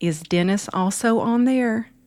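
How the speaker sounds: put-on Southern accent, warm motherly voice. Retelling a mother's question about the podcast, imitating her southern voice. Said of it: "my mom in her beautiful southern voice says".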